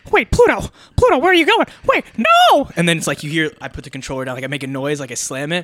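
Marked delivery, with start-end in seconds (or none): 0.1-2.7 very high, swooping cartoon voice. Calling after Pluto while playing a game: Mickey Mouse voice. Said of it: "I got to do it in the Mickey voice".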